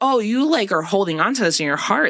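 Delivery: ordinary talk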